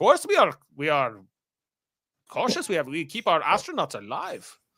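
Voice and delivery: laid-on, put-on German-accented English. Retelling what Von Braun says at the hearing in a German accent. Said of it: "no more German accent".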